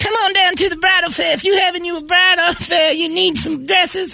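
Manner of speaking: very high, ad-style woman's voice. Performing a bridal fair commercial line as a woman: impression of Mary. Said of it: "I would just do an impression of her".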